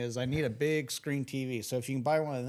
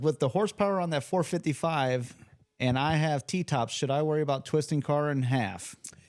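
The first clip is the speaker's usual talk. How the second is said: ordinary talk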